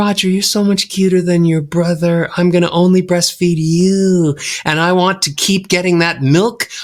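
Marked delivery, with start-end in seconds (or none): 0.0-4.4 imitated airy, light voice. Retelling how his mother spoke to him as a baby: imitating mom's airy voice. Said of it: "If my mom speaks really airy".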